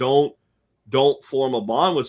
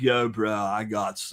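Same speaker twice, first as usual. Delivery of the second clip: put-on stoner dude voice, quieter; 4 dB quieter than usual. Acting out a stoner dude offering Woodstock tickets: stoner dude voice. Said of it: "like the dude that's like".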